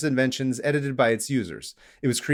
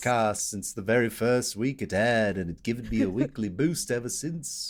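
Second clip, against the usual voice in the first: poor Liverpool accent, quieter; 3 semitones lower, 4 dB quieter than usual. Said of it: "That was my [name] impression".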